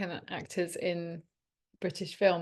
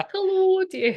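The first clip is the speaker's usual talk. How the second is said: put-on Scottish accent, much higher and louder; 13 semitones higher, 8 dB louder than usual. Chatting about attempts at a Scottish accent, doing a Mrs. Doubtfire Scottish voice. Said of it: "I'm like Mrs. Doubtfire".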